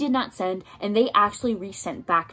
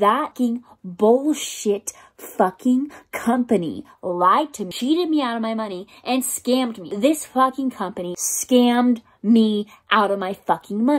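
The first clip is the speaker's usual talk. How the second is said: enraged, boiling-over, livid rant; 2 semitones higher, 4 dB louder than usual. Talking to an audience, furious ranting. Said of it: "I am livid".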